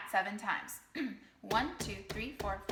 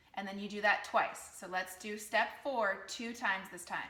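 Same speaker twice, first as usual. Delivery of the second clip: ordinary talk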